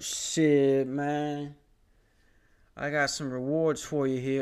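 put-on Southwest local man voice. Acting out a Jimmy John's worker handing over rewards: put-on Southwest guy voice. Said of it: "they talk like this".

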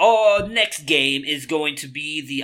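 sudden, slow slip into a British accent. Picking football games with a co-host, slipping into a British accent. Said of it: "I just kind of went British there".

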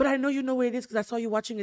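put-on thick French accent. Retelling what the speaker's mother replied to him, in a thick Pepe Le Pew French accent. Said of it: "she has a very thick accent like Pepe Le Pew".

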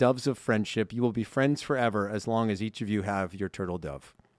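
plain

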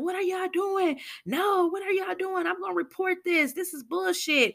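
put-on angry yelling. Retelling a scene where a woman protests an arrest: imitating someone yelling. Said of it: "And while she's yelling".

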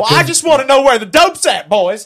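play-acted, very loud, aggressive, accusing tone. Retelling how a cop questioned them: imitating an aggressive accusation. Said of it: "super aggressive, super accusatory".

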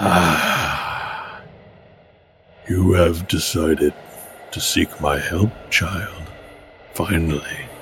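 very slow, drawn-out, mysterious, ominous otherworldly spirit voice. Voicing a mysterious voice that appears to a player: voice of a mysterious being. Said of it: "he appears and he says".

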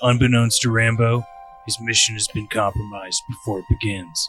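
action-movie hero narration voice. Reading a movie synopsis aloud: John Rambo voice. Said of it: "I'm just going to read it in John Rambo voice".

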